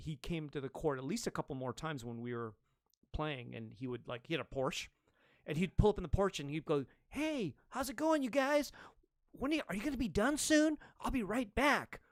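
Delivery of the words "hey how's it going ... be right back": put-on very high boyish voice, like a child. Retelling how he greeted the players at the court: imitating Owen Wilson. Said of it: "just like that".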